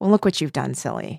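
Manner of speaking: mock saccharine, sugary tone with an unsettling, creepy edge. Retelling an actress's line from a Thanksgiving scene: imitating a creepy sweet line. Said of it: "which is so creepy, and she does it so well".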